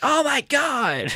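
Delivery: crazed, wild, very high shrieking scream. Imitating Joe Rogan reacting to a reversal: imitating Joe Rogan screaming. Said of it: "screaming like a psycho".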